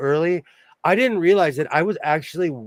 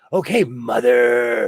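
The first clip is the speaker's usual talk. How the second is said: creepy put-on voice, much lower pitch; 5 semitones lower, 3 dB louder than usual. Discussing a mom who hates being called mother, the speaker uses a creepy Psycho 'mother' tone. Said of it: "he always says mother... it's the tone".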